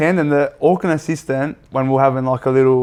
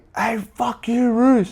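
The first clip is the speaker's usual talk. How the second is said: play-acted, high, drawn-out screaming yell; 9 semitones higher, 3 dB quieter than usual. Retelling the Auckland assistant shouting at him: imitating someone screaming. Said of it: "Auckland assistant starts screaming at me".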